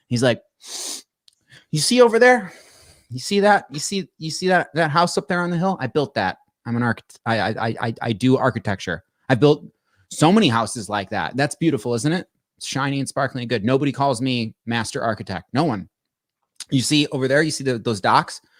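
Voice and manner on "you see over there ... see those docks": plain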